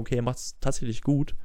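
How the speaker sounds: ordinary delivery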